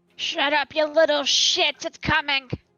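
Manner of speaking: loud, high, angry ogre-like brute hollering. Voicing an ogre yelling at dogs in the kennel: ogre yelling at dogs. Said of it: "ogre Trespin yelling at the, uh, dogs".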